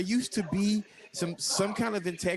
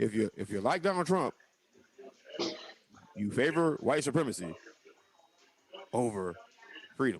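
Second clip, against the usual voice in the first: very low, deep speaking voice; 7 semitones lower than usual. Making a point about Trump supporters in a Barack Obama voice. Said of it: "let me use my Barack Obama voice".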